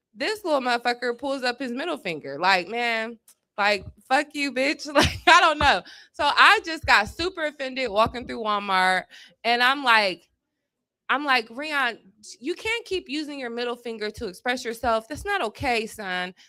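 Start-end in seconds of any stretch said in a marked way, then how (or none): 11.5-16.3 gentle, soft, worried mom voice. Retelling how they scolded a boy in Walmart, imitating a concerned mom. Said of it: "That's my concerned mom voice".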